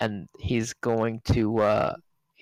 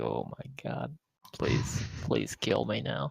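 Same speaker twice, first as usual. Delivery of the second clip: desperate, pleading, begging voice; 2 semitones lower, 9 dB quieter than usual. Voicing a knight who begs to be killed: knight begging to be killed. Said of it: "The knight is ... he is just like".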